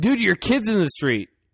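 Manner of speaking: normal talking voice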